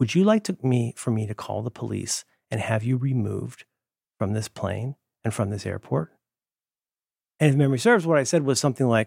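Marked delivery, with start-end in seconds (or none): 0.0-6.1 soft-spoken, quiet, hushed, close to the mic. Retelling what a man said while in the speaker's face, quiet voice. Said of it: "in a quiet voice says".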